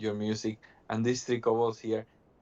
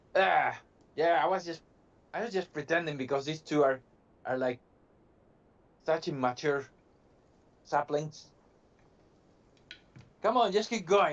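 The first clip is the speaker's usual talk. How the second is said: grouchy, grumbling, high-pitched kobold creature voice; 5 semitones higher than usual. Voicing a kobold answering players who ask if it's okay: grumpy kobold voice. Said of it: "he seems a bit grumpy all of a sudden".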